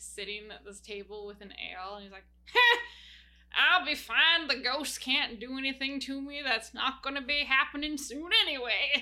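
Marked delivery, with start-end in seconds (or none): 2.5-9.0 put-on old man voice, louder. Narrating a game scene, voicing a really old man sitting at a table with an ale. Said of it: "a really old, brittle-looking man".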